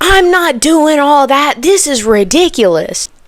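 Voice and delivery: angry yell, high-pitched. Retelling how a lady cut them off over an email prompt, retelling a yell. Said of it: "yells in my face and says".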